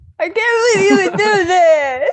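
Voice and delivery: bawling, crying hard, sobbing through every word. Playing Hephaestus's dad or uncle in a game, bawling behind him. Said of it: "your dad and your uncle are just bawling".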